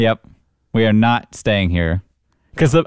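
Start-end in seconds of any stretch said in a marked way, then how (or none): none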